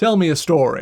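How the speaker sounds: big, booming, echoing, resounding voice. Voicing Emphas calling out through the corridor, booming voice. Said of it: "a booming voice that echoes through the corridor".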